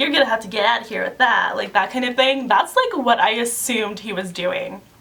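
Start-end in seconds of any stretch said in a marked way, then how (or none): 0.0-1.6 put-on sarcastic voice. Explaining how people joke around, imitating a sarcastic remark. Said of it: "always, like, sarcastic".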